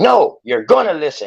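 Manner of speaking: acted loud, insistent outburst, pitched high. Retelling how another speaker got loud in a discussion: imitating someone getting loud. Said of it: "Then you got loud".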